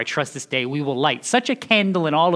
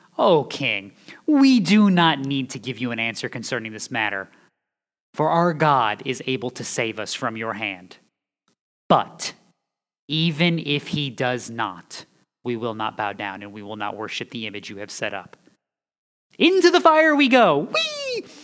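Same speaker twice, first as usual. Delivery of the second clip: acted, swooping, utterly sarcastic, scornful, contemptuous delivery; 2 semitones lower than usual. Retelling the three men's answer to the king: acting out sarcasm and contempt. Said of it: "delivered with utter sarcasm and contempt".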